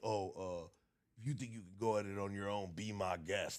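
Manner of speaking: mock arrogant tone. Quoting what a guy he no longer talks to used to say, mock-arrogant tone. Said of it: "Like on some arrogant shit like".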